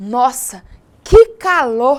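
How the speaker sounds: loud, emphatic exclamation with strong feeling. Teaching punctuation with an exclamatory sentence example: exclamatory. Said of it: "Viram só a entonação? É uma frase exclamativa".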